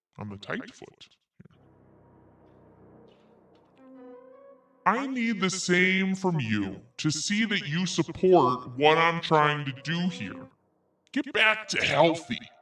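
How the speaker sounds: animated, swooping delivery in a different voice. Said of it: "I'm reading this in Greg's voice".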